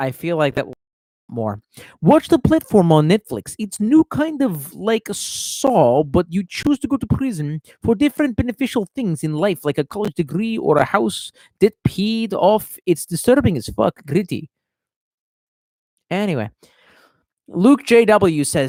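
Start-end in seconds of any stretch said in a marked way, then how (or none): 2.0-14.5 Slavic accent, raised pitch. Reading a viewer's message aloud in a Slavic accent. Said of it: "I'm gonna read it with a Slavic accent".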